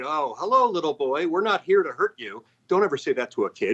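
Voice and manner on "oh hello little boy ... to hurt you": unsettling, sugary, falsely gentle, creepy sweet voice. Retelling a protester outside his home speaking to him, imitating a creepy woman. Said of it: "she very creepily said".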